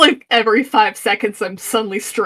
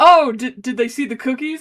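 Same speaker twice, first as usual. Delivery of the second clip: ordinary talk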